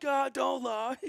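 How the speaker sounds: very high, shrill, loud, furious shouting. Retelling driving off as a man shouts at them: imitating a man yelling. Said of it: "you could just hear him just yelling like".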